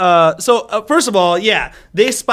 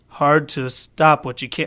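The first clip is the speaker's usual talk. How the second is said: low, flat, deadpan delivery; 6 semitones lower, 5 dB quieter than usual. Recounting a submarine movie scene to another speaker, doing a deadpan Nicolas Cage impression. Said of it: "completely deadpan".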